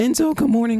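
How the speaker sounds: voice cracking. Replying good morning to a greeting, voice cracking. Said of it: "my voice cracked there".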